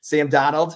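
name said loudly in Boston accent. Proposing a new way to say a name, says it in Boston accent. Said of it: "we should refer to Sam Darnold with a Boston accent".

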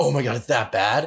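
panicked freak-out. Speaker retells their reply after a woman apologized: retelling own freak-out. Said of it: "I'm a kid and I'm clearly freaking out".

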